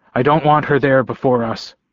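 usual speaking voice

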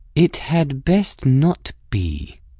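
sugary, sickly sweet tone with venom underneath. Cavendish replies to Espira's offer to button up, in a poisonously sweet tone. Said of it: "in a poisonously sweet tone".

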